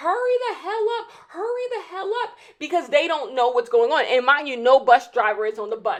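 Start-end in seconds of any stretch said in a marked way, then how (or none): 0.0-2.4 put-on rowdy kids voices, high, impatient screaming. Retelling rowdy boys in the back of a bus: imitating boys screaming. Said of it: "they just start screaming like".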